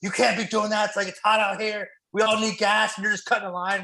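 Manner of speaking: put-on griping, yelling, scolding tone. Retelling what a guy at the gas pump said: imitating someone yelling. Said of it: "this guy was just yelling at me".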